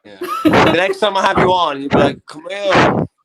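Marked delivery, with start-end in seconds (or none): 2.3-3.1 imitated Dublin accent, louder. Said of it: "You'll be getting that accent pretty soon".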